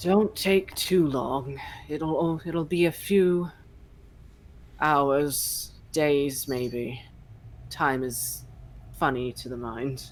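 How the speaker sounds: deep, ancient-sounding rumbling voice. Game master voices Glasshail settling on his hoard, in Glasshail's deep, ancient rumble. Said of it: "rumble in his deep, ancient voice".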